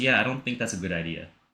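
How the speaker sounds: put-on sarcastic tone. Retelling how someone shuts down a suggestion: imitating Tage's sarcastic reply. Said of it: "she literally just sarcastically says".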